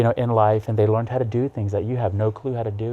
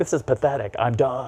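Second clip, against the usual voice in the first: angry, fed-up, pissed-off tone; 2 semitones higher than usual. Retelling what the judge said after an arrest: imitating an angry judge. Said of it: "He was so pissed".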